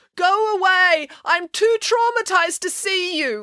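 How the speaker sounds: very high, upset, slow loud call. Mrs. Cannon answers Melanie's knock from behind the door, calling out through a door. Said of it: "called Mrs. Cannon".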